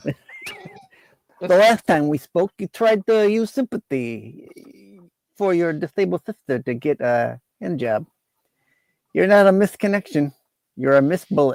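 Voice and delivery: put-on terrible, laid-on Italian accent. A caller introduced as Vinny the Rod speaks to the others, in a bad Italian accent. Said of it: "You have the worst Italian accent ever".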